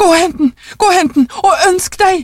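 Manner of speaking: shrill, quivering, high agitated shout of excitement. An old wife, whose first wish came true, speaks to her stammering husband; shouting, trembling with agitation. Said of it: "ropte konen, dirrende av opphisselse".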